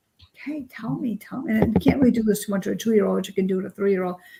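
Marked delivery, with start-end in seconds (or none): 0.3-1.6 soft, slow, gentle coaxing voice. Showing how to coax a young child to tell what hurts, nice soft voice. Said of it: "just kind of like a nice soft voice".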